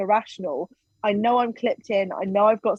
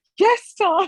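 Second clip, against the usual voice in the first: very high, tearful, crying voice; 11 semitones higher, 4 dB louder than usual. Retelling answering tom through tears: imitating own past crying. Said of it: "I'm still crying at this point".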